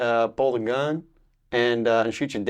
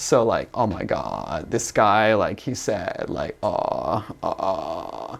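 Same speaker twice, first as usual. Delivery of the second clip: creaky, fried-out vocal fry; 4 semitones lower than usual. Complaining about how people talk, demonstrating the habit: vocal fry. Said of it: "like vocal fry".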